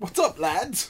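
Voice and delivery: put-on casual British accent. Voicing the character Flint, the speaker uses a British accent. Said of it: "I don't know why he's British".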